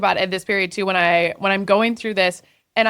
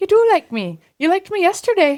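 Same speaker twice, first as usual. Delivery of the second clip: put-on Irish accent with very high voice; 10 semitones higher, 3 dB louder than usual. Imitating a TikTok soundbite from a movie: Irish accent. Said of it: "it's an Irish accent".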